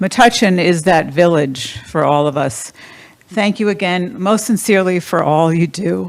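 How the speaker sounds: choked up with rising emotion. Speaker thanks metuchen for all it does, choked up. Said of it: "I'm getting a little choked up".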